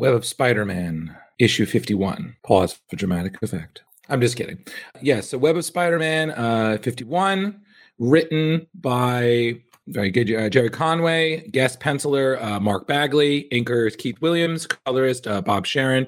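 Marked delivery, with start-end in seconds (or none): 0.0-3.8 put-on synopsis-reading voice, lower. Starting the plot synopsis, doing an impression of Chris reading. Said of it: "my most accurate impression of Chris reading the synopsis".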